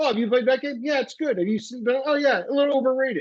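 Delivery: high, casual chit-chat impression voice.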